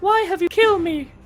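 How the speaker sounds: put-on small girl's voice, very high. Saying a goodbye as the little girl: little girl voice. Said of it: "my best impression of the little girl".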